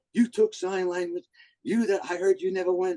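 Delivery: mock very high, screeching, screaming rant. Retelling how the coach called in January: imitating someone screaming. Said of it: "calls me and starts screaming at me".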